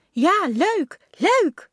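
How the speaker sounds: cheery calling out. Calling back as someone cycles off to school, called out. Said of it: "Riep Dummy".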